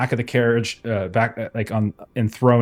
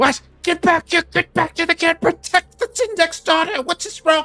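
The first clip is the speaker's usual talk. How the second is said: alarmed, panicked, very high calling out. Game narrator voices Two Hands calling out about the kid, panicked calling out. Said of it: "doing so in a way that sounds more panicked".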